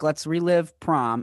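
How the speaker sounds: ordinary talk, nothing marked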